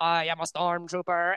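voice sounding like it comes through a walkie-talkie. Retelling how a man waiting in line for a movie spoke, in a stormtrooper voice. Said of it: "a stormtrooper's voice".

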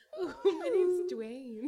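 airy, very high, breathy character voice. Voicing the rock character in a group scene, in a breathy rock voice. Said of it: "The rock is really breathy in this dimension".

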